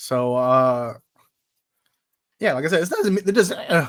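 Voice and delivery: breaking, cracking voice mid-line. Talking with a friend, voice cracking. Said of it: "my voice is keeps cracking".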